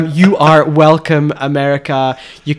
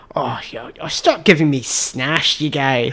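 unhurried, fatherly-sounding voice; 7 dB quieter than usual. Explaining a Scottish word by quoting a father: imitating dad. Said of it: "my dad would be like".

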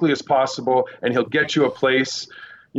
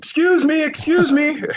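shrill, very high yell; 14 semitones higher, 3 dB louder than usual. Covering the Indonesia tsunami, trying to get a chaotic crowd's attention: retelling a yell. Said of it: "I yelled out".

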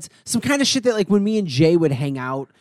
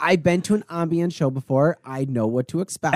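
ordinary delivery

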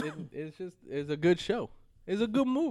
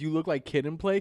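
ordinary talk, nothing marked

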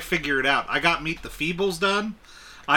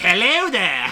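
put-on witchy old-lady voice; 4 semitones higher, 4 dB louder than usual. Imitating the old witch lady from a film: old witch lady voice. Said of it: "where the old witch lady was like".

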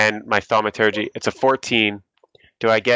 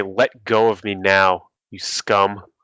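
slow, menacing, intimidating demon voice; 2 semitones lower than usual. Playing a demon who is grabbed by the arm: intimidating. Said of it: "I'm just gonna try to intimidate him".

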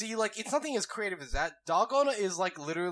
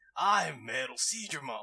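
bored evil surfer dude voice, lower pitch; 4 semitones lower than usual. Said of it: "It's like evil surfer dude".

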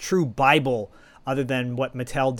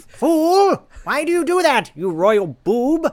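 very high, loud, shrill, slow, swooping voice; 14 semitones higher, 8 dB louder than usual. Riffing on the word fool after a laugh: Skeletor voice. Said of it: "I was listening to Skeletor all morning".

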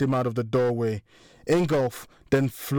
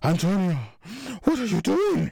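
shaky, trembling, pitched-up, wavering voice; 7 semitones higher than usual. Moritz pleads with Antonio, who towers over him, in a shaky voice. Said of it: "Moritz continued in a shaky voice".

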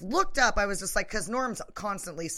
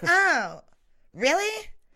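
mock offended young woman voice, higher and louder; 9 semitones higher, 6 dB louder than usual. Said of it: "you're not embellishing that voice at all".

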